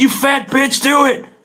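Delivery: very high-pitched, slow, drawn-out yell. Retelling talking to himself while skating alone: imitating own past yelling. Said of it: "can't be yelling that right now".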